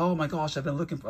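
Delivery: bad put-on British accent. Retelling what a man said on finding a car two-pack, bad British accent. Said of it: "I don't want to try to do a British accent. It's horrible".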